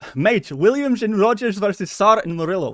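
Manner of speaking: rough attempted Dutch accent. Reading out a match-up after giving up on swedish; attempted dutch accent. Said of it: "I'll do a Dutch accent".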